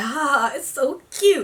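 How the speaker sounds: play-acted charmed, fond, affectionate laughing. Retelling how people at the bar laughed: imitating fond laughter. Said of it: "They were laughing like".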